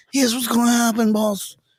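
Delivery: mafia-style talk. Retelling what they told their boss about the schedule: mafia member voice. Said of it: "I'm sounding like a mafia member right now".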